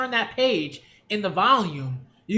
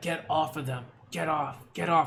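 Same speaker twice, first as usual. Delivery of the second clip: barely able to speak, struggling to get words out; 4 semitones lower, 4 dB quieter than usual. Retelling a manga scene where Twice can barely speak: imitating Twice barely able to speak. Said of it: "he can barely speak. He's just holding it together".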